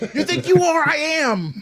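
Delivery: high, drawn-out, stretched taunting trash talk. Quoting a famous bowler's trash talk: Pete Weber impression. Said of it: "talk like Pete Weber".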